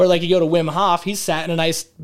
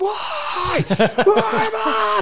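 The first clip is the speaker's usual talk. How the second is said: very high, very slow, lung-busting scream. Retelling shivering while driving down the canyon: imitating own scream at top of lungs. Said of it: "screaming at the top of my lungs".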